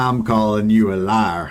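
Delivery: slow, best-effort western cowboy drawl. Retelling a chat viewer calling another a liar: Western accent. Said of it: "like, best Western accent".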